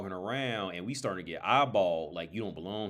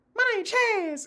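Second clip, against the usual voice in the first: very high, loud, teasing, mocking squeak; 7 dB louder than usual. Retelling how a friend imitated Chaz's voice: Chaz voice. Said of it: "he used to imitate Chaz's voice".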